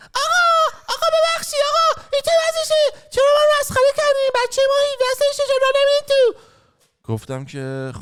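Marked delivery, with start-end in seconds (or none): 0.2-6.4 imitated woman's voice, higher and louder. Retelling how a complaining woman spoke at a club: imitating a woman's voice.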